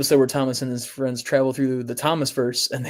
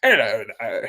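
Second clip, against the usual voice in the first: put-on train engine voice, lower; 3 semitones lower than usual. Showing how to sound like Duck from the show. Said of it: "I could really sound like the show Duck".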